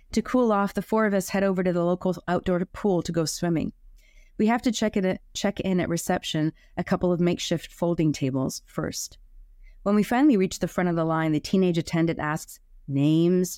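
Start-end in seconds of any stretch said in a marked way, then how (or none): none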